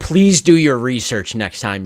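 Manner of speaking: mock-condescending, patronizing tone. Speaker quoting a reviewer who corrected her, mock-condescending. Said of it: "they were like really condescending on the review".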